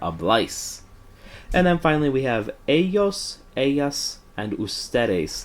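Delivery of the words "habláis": habláis with the second syllable bláis stressed. Spanish verb lesson about the accent mark: stress on bláis in habláis. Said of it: "that means that the second syllable is louder".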